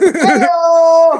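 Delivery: loud, high, drawn-out hey-oh call. Acting out Gerald popping out to surprise someone: imitating Gerald's way of talking. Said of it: "I don't know why he talks like that".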